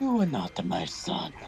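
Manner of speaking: ice-cold video-game hero voice, as cold as possible. Saying a line from a story cold: cold Mario voice. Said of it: "as coldly as possible in Mario's voice".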